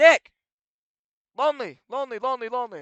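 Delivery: very loud, shrill screaming voice. Retelling a teacher calling a zoned-out student: imitating a teacher screaming. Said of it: "She's screaming".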